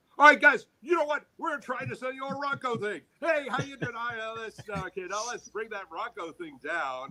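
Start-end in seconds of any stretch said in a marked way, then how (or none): 0.2-4.0 high, full-throttle, hyped sales-pitch energy. Demonstrating an excitement scale at its top level, maximum excitement energy. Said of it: "let's go all the way up here".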